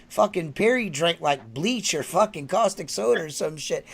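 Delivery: ordinary delivery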